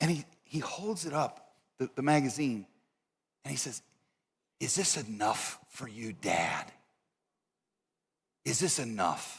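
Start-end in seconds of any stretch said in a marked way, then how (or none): 4.6-9.4 sudden hushed half-whisper with dawning realization. Retelling Ted Turner's words to students, holding up a magazine: imitating Ted Turner half-whispering. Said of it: "his voice turns to a whisper".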